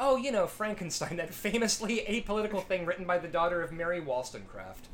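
ordinary delivery

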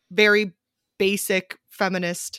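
ordinary talk

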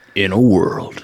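put-on movie trailer announcer voice. Asked whether anyone can do the movie trailer voice, one tries: movie trailer voice impression. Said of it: "can you do an impression of it?".

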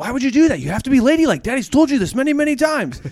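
very high-pitched, loud scolding yell. A father retells yelling at his daughter in the car, re-enacting the yell. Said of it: "I'm just like yelling at her".

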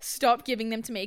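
usual speaking voice

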